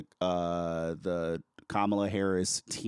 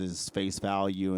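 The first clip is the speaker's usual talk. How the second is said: normal talking voice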